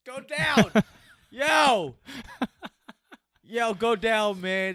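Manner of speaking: high, really loud, all-out yelling. Watching a fight and urging a fighter to go down, yelling really loud. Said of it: "because I'm yelling really loud".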